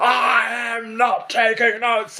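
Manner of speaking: mock very high, very slow, drawn-out bellow. Retelling how they answered a rude man in front of everyone: retelling a bellow. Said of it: "I bellowed back at him".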